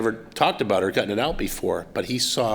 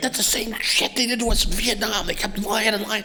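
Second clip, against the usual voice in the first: mock furious shouting, very high-pitched; 12 semitones higher than usual. Retelling the speaker's uncle's outburst during a shared moment, retelling an angry yell. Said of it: "And he's yelling".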